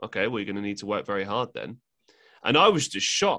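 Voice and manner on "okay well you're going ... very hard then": mock-deadpan, quieter, faster. Retelling how she answered the speaker's sarcastic goal, retelling her deadpan reply. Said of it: "just dead face just said".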